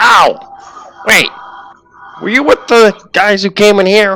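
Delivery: very high, squeaky little kobold creature voice. Voicing a kobold who spots a player peeking out: kobold voice. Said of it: "one of the kobolds seems to take notice of you and says".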